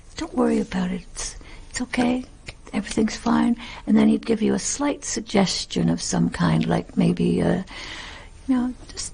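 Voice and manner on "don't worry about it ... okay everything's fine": hushed, very quiet, close, intimate confiding whisper. Retelling how the director reassured actors: imitating someone talking very quietly. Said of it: "he'd be talking very, very quietly".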